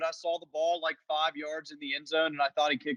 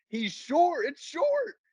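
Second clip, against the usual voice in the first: put-on, very high, shrill, drawn-out angry outcry; 10 semitones higher than usual. Retelling own reaction while watching a field goal: imitating own angry yell. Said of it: "I yelled".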